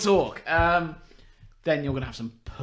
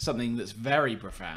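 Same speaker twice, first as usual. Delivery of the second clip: usual speaking voice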